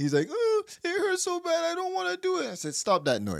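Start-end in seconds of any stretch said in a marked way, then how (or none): 0.3-2.5 mock, very high, whiny sobbing whimper. Speaker retells him crying ten minutes into warm-up drills, imitating someone crying. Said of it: "He's crying".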